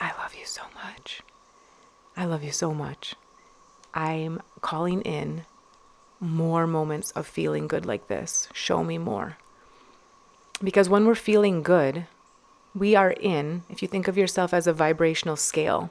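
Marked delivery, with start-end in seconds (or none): 0.0-9.4 soft, hushed whisper under the breath. Describing what she whispered to her drink before sipping, whispering. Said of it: "just whispering like".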